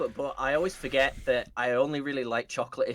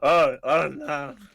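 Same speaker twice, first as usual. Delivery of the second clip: put-on lusty, lecherous, randy old man voice; 4 dB louder than usual. Repeating the other speaker's "oh no" playfully: randy old man noise. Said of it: "I made the randy old man noise".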